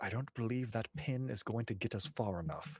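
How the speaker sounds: muttered under the breath. Looking over to a companion, the character mutters under his breath. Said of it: "just kind of under his breath".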